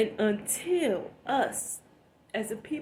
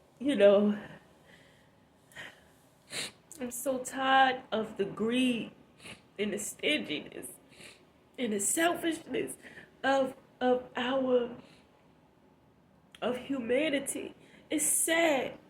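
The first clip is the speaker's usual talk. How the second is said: crying, tearful voice; 3 semitones higher than usual. Complaining to viewers about greed and selfishness, crying while talking. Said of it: "I'm snotting and crying".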